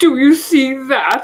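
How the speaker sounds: voice choking with passion. Reading a story aloud, voicing a character grabbing someone: voice choking with passion. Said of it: "in a voice choking with passion".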